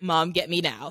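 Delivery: ordinary talk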